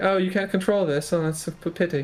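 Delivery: patronizing, superior, condescending, talking-down tone. Imitating how she would talk to you: imitating a condescending tone. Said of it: "be really condescending".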